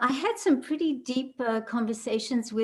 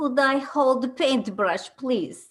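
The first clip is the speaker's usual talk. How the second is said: put-on heavy Russian accent, laid on thick. Quoting a gentleman who tapped her shoulder while painting, heavy russian accent. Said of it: "heavy, heavy Russian accent".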